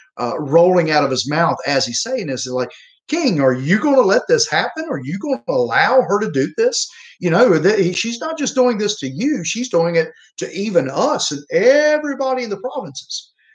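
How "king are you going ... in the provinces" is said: acted, high, dripping with sarcasm. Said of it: "you can almost just see the sarcasm".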